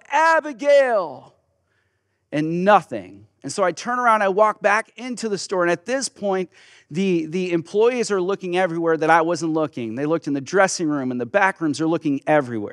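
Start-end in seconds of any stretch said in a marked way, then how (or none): 0.1-1.3 high, full-throated, desperate top-of-lungs yell. Retelling searching the mall for Abigail; re-enacting a top-of-lungs yell. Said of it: "I just yell".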